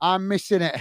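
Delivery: normal talking voice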